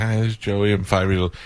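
put-on, sweet little kid voice. Parent recalls their five-year-old son introducing himself; imitating Joey's sweet little voice. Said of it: "he had a sweet little voice".

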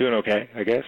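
sad, down-and-out, deflated tone. A caller picking up to radio hosts on air, sounding down. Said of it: "you sound a little bit down and out".

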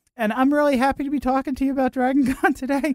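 very high, loud, excited squeak. Retelling going on the air at an event, imitating own excited voice. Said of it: "my voice went like this".

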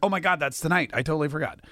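ordinary talk, nothing marked

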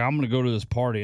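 usual speaking voice

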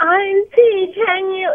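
high, whimpering, crying whine. Describing how he always talks to the speaker, imitating a whiny voice. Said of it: "it's like a whiny voice".

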